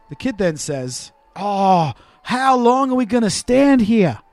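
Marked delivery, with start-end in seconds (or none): 1.3-4.1 fake Australian accent, raised and slow. Retelling what a kid said to his dad while waiting: fake Australian accent. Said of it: "What accent is that?".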